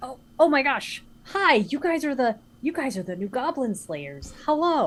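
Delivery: put-on young woman voice. Game master voicing a young woman greeting the party at the town hall door: young woman's voice. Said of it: "a younger woman with like really big spectacles".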